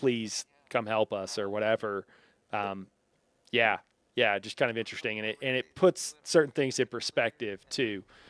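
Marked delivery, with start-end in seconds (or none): 0.0-1.4 put-on begging, lower and quieter.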